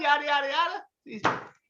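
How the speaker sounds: squeaky voice up an octave, rattled off.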